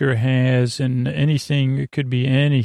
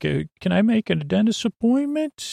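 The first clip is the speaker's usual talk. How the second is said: put-on voice, much higher than normal; 8 semitones higher than usual. Speaker demonstrates the voice they use when phoning someone; high phone voice. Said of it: "That's my high voice".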